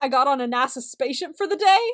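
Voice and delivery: sincere, earnest, believable, convincing tone. Acting out an unlikely excuse in a made-up example: pretending to lie convincingly. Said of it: "but saying it really convincingly".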